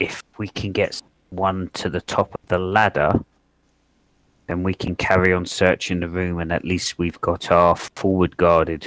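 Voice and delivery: whispering very quietly, hushed. Game player speaking in character to Aladai, whispering very quietly. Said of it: "I'm going to whisper very, very quietly".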